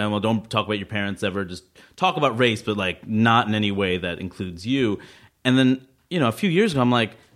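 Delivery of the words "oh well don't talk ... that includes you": normal talking voice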